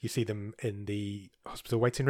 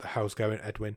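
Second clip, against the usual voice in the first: usual speaking voice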